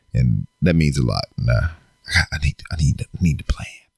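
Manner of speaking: hushed whisper. At home with only the kids around, speaking while whispering. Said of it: "I don't know why I'm whispering".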